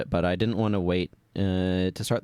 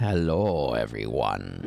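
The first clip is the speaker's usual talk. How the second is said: lower, deep, congested voice with throat mucus; 8 semitones lower than usual. Greeting viewers at the start of a stream: deep voice from throat mucus. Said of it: "the mucus in my throat making my voice deep".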